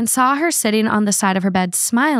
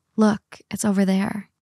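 put-on low, wispy, ghostly whisper; 4 dB quieter than usual. Speaker retelling a voice heard at a cemetery, imitating a low wispy whisper. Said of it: "a wispy voice that sounded like a low whisper".

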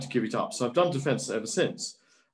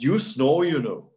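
put-on Welsh accent; 4 dB louder than usual. Retelling what a fellow mp said in the bunk room: imitating a welsh accent. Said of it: "saying in his Welsh accent".

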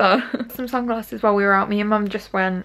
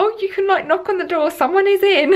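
very high, loud, called-out shout; 11 semitones higher, 3 dB louder than usual. Retelling calling out to a delivery man while getting out of the car; retelling a shout. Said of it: "so I just shouted".

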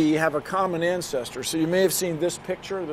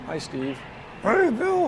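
lumbering woolly mammoth voice, high, slow and swooping; 5 semitones higher than usual. Speaker discussing cloning extinct species does a woolly mammoth impression. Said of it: "It's my woolly woolly mammoth impression".

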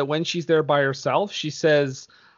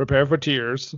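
put-on mocking dramatic tone; 2 semitones lower than usual. Repeating a line from a played movie clip: imitating a mocking line. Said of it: "just the mocking".

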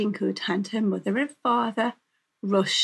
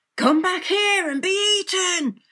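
very high, loud shouting; 10 semitones higher, 4 dB louder than usual. A wolf chases a fleeing girl out of the house; shouting. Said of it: "shouted the wolf".

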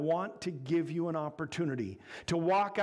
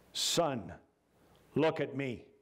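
stern, firm, very slow and deliberate; 5 semitones lower than usual. The judge addresses the convicted prisoner after the verdict, stern. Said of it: "he said sternly".

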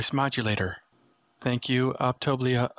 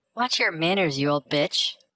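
higher-pitched female voice, up in register; 4 semitones higher than usual. Reading a story aloud, a character quips back: higher-pitched female voice. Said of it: "the higher pitch in her voice".

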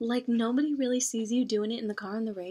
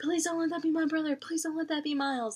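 mock frantic, high, rushed, panicked begging; 5 semitones higher than usual. Recounting how everybody reacted to the plane accident, retelling a panicked plea. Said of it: "everybody was freaking out, like".

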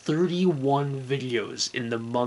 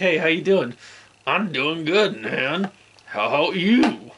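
loud, chatty, raised puppet voice; 4 semitones higher, 5 dB louder than usual. Showing how the puppet will talk when puppeteered: Comic Sans puppet voice. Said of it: "puppeteer him and have him talk like".

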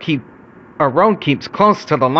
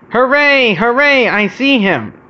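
joyful, high, happy cheering cry; 8 semitones higher, 3 dB louder than usual. Bertie the bus reaches the top of the hill and sees Edward: cheering. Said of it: "cheered Bertie".

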